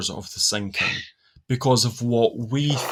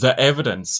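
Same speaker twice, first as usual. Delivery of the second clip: ordinary talk, nothing marked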